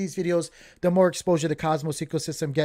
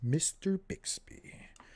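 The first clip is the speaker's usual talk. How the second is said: put-on movie villain voice; 10 dB quieter than usual. Greeting a chat viewer by name: Agent Smith from The Matrix voice. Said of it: "agent from Matrix voice".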